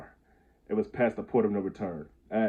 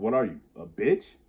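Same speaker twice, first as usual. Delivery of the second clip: put-on taunting tone. Recounting what he said as a ten-year-old: retelling a taunt. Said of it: "So I say with a taunting voice".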